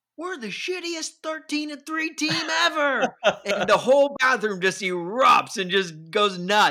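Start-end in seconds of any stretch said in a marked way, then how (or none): 0.2-3.2 mock drunken yell, much higher, louder, slower. Retelling a bathroom story, imitating a drunk Titans fan's yell. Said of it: "He just yells out".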